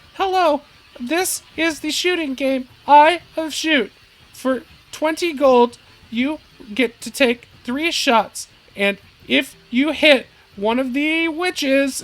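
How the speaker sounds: very high, piping, high-pitched game-host voice. Voicing a shooting-game attendant coached by Goober, much higher voice. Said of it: "This one has like a much higher voice".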